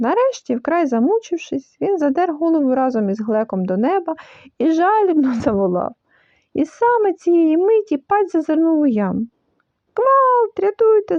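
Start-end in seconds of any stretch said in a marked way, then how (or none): 9.9-11.2 frantic, high, panicked squealing scream. The piglet peers into the pit and sees the trapped creature; shrieking. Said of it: "зарепетував паць".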